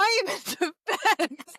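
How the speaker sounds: very slow, giggling, laughing through the words. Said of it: "Stop making me laugh".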